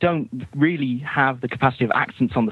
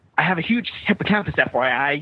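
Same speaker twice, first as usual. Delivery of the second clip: put-on American accent; 2 semitones higher than usual. Imitating an English actor's American accent from Flash Forward: James Callis American accent impression. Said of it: "another English actor's American accent of, uh, James Callis saying".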